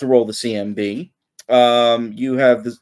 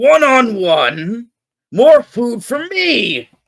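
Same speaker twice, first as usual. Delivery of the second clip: high, very slow, roaring bear bellow; 11 semitones higher than usual. Voicing a bear that shouts back at a challenger: bear shouting. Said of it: "kinda just shouts back at you".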